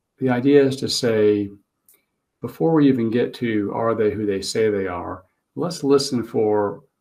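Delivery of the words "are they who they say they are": ordinary delivery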